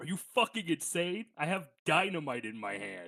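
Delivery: put-on, outraged, mildly angry yelled outburst. Playing a character who gets shot, yelling back: yelling in character. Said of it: "and I recoil, and I yell".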